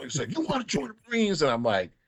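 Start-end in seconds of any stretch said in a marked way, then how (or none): 0.4-1.4 very high shouting drill-sergeant voice. Retelling a marine sergeant recruiting at career day: imitating a yelling recruiter. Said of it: "he's yelling at us".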